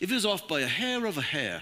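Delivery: put-on smart-sounding, polished British accent. Quoting a favorite atheist's words: Christopher Hitchens impression. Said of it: "he says it like this, and he's British".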